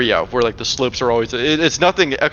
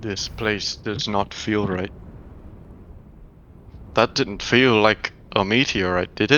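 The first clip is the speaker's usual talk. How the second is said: softly spoken, hushed, low-key voice; 3 semitones lower, 5 dB quieter than usual. The narrator voices Soren as the group walks closer holding the amulet: soft voice. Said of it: "kind of in a soft voice".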